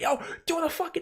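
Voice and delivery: high, frantic, panicked freaking-out yell.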